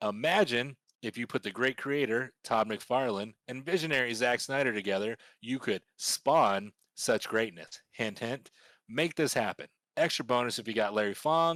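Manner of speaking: ordinary delivery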